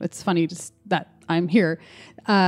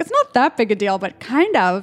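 put-on playful jokey voice, sing-song; 3 semitones higher than usual. Acting out what a tarot card says: put-on jokey voice. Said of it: "in that jokey voice where you're like".

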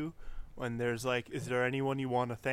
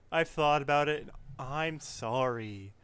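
mocking, insincere, slow sarcastic delivery; 2 semitones higher, 3 dB louder than usual. Retelling an interviewed wrestler's answer: imitating Nakamura's sarcastic apology. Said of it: "sarcastically saying".

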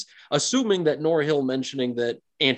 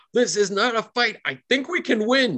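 all-out, high-pitched screaming holler; 9 semitones higher than usual. Voicing a character yelling to the players mid-battle: NPC screaming out. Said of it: "he starts screaming out".

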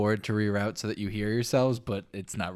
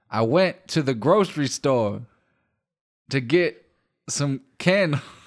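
loud, very slow, every word drawn out; 4 semitones higher, 6 dB louder than usual. Retelling a reworked stand-up joke for the others: Mitch Hedberg impression. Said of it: "I'm gonna do my Mitch Hedberg impression".

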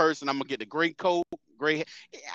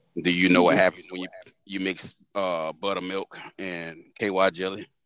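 sexy, seductive man's voice, much lower; 10 semitones lower than usual. Speaker shows how they deliver a line for people's reaction, in sexy man tone. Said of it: "Especially when they hear it in the sexy, sexy man tone".

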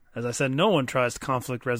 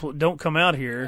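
normal talking voice

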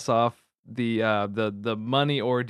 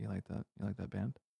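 hushed whisper, very quiet, barely audible; 3 semitones lower, 17 dB quieter than usual. Retelling a guy at a vinyl store walking over: imitating a whisper.

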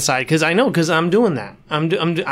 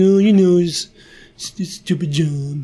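play-acted whingeing whine. Retelling how a film character complains about his job: imitating a whiny complaint. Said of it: "he's really whiny about it".

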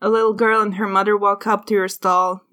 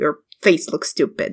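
put-on sullen, petulant, pouting kid voice; 5 semitones lower than usual. Voicing an eight-year-old girl answering her sister: pouting. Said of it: "sits there and pouting".

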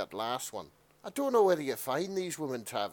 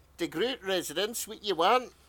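put-on elderly woman's Scottish accent, old granny voice; 4 semitones higher, 4 dB louder than usual. Playing the Demo Mum answering the phone, in an elderly Scottish lady accent. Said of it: "let's hear your elderly Scottish lady accent".

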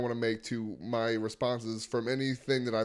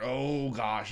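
put-on dramatic voice. A host echoes the other host's exclamation, in a mock-dramatic tone. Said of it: "in a dramatic tone".

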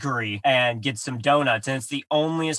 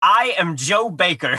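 put-on, cartoonish, ridiculous caricature American accent; 4 semitones higher, 4 dB louder than usual. Recapping a story, quoting a character's disguise introduction, in a caricatured American accent. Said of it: "in a ridiculous, like, caricature of an American accent".

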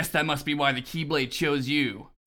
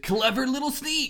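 very high, cartoony hero voice; 10 semitones higher than usual. Reading a villain's line from notes: Xigbar voice slipping into Sonic. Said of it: "it eventually slips into Sonic the goddamn Hedgehog".

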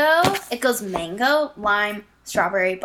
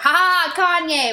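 high, gloating, evil cackle, pitched up; 7 semitones higher, 4 dB louder than usual. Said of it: "with her evil fucking laugh".

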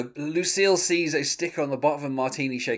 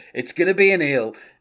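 loud, blurted, hollered shout; 3 semitones higher, 6 dB louder than usual. Retelling a scene where Buster shouts out: imitating Buster shouting. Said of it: "Buster just shouts out".

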